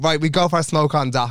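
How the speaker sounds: ordinary delivery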